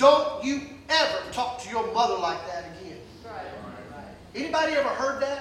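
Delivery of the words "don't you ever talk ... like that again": very stern, low fatherly voice. Recalling words his dad said to him, imitating a stern dad. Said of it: "my dad saying to me very sternly".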